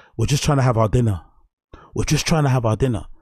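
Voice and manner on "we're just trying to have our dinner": ordinary delivery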